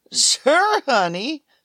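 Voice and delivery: little, high, squeaky voice. The private eye answers a woman who has come looking for him, squeaking. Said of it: "I squeaked".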